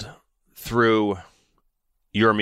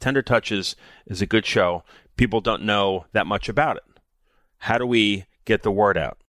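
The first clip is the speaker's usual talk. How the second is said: ordinary talk, nothing marked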